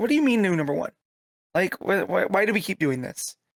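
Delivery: put-on exasperated voice. Retelling how Lois reacts to a new number one: imitating an exasperated Lois. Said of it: "she's getting annoyed by it. And she's, like, exasperated".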